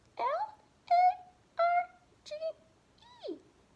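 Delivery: very high, squeaky, slow little mouse voice. Spelling a word letter by letter along with the listener, in a mouse voice. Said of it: "let's spell it in a mouse voice".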